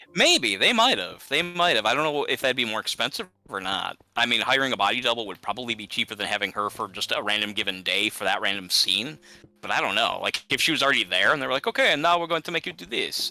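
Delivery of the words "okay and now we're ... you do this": mock, put-on Italian accent. Imagining what they might have told the actress, in an italian accent. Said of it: "I don't know why I'm Italian all of a sudden".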